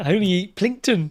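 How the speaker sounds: put-on New Zealand accent. Quoting a video that always cracks you up, in a Kiwi accent. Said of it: "good old Kiwi accent there".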